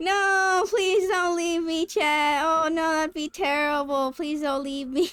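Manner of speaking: insincere pleading tone with obvious sarcasm. Asking chat not to leave: sarcastic pleading. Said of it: "That sounded so sarcastic".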